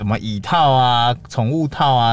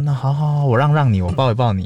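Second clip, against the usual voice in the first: mock soothing, coaxing voice; 3 semitones higher than usual. Imitating how passers-by coax a crying child: imitating coaxing a crying child. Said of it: "哄一下。".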